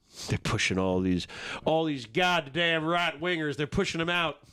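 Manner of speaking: fake Southern American accent. Commenting on a video about Nike pushing people out: put-on Southern accent. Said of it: "I did that in a Southern".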